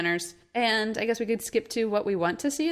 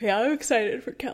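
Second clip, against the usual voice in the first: mid-yawn speech, faster. Chatting with a co-host about comics: yawning. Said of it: "I yawned when I said that".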